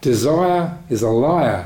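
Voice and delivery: very slow, clumsy put-on Australian accent. Quoting an australian man from a meditation evening, in a bad australian accent. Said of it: "My bad Australian accent".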